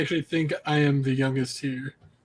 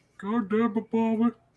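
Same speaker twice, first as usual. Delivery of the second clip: slow, stretched-out, high-pitched scolding tone; 8 semitones higher than usual. Doing an impression the others asked for: Hank Hill impression. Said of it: "does an amazing Hank Hill impression".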